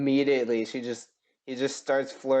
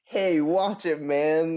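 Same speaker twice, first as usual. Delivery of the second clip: obnoxious, douchey jerk tone; 4 semitones higher than usual. Describing a movie character who keeps talking: imitating a douchey voice. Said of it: "keeps talking in this douchey voice".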